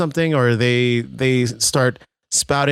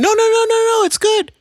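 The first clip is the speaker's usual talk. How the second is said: voice jumping way up, high-pitched and reassuring; 4 dB louder than usual. Acting out reassuring someone who asks if you don't like it, voice going really high. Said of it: "your voice gets really high".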